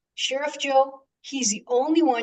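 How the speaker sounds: put-on thick, heavy Mexican accent. Quoting a lady who came up to praise the sheriff, in a thick Mexican accent. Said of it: "I'm Mexican with a real thick accent".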